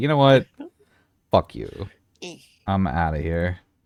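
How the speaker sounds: huffy, indignant tone with swooping pitch. Voicing Bob, who takes a hit personally and leaves: voicing Bob storming off. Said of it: "He's gonna be like".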